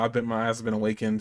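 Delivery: ordinary talk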